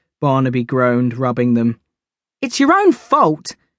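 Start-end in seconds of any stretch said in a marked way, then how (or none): 2.4-3.5 high-pitched, exclaimed voice. Narrator reads a character answering a groaning companion: exclaiming. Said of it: "Nora exclaimed".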